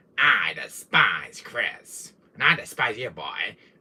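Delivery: very slow, deliberate character voice, every word dragged out. Practicing a character voice: Albert Wesker voice. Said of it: "practicing with my little Wesker voice".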